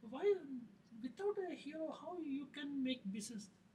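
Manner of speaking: high-pitched, frustrated, exasperated protesting tone. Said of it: "he's frustrated".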